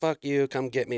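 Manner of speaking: put-on mocking laughter. Retelling a man taunting from a ledge: imitating a laughing taunt. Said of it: "He's laughing and shit".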